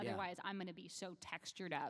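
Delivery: ordinary delivery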